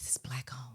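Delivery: soft, breathy, whispered undertone. Retelling how visitors lean in to ask: imitating a soft whisper. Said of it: "They lean in and say softly".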